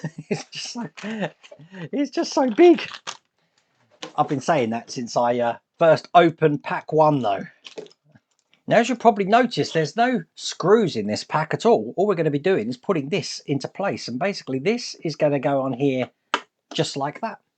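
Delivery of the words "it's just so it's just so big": talking through laughter. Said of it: "why I'm laughing now".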